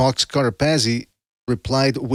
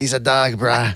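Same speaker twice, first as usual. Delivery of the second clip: put-on tough reality-show bounty hunter voice. Mimicking another speaker's line: Dog the Bounty Hunter voice. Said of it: "Why did you sound like Dog the Bounty Hunter there?".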